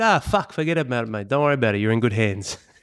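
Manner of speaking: put-on old-school Italian father voice. Retelling a friend's old-school Italian father asking about the program: imitating an old-school Italian father. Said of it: "obviously old school Italian".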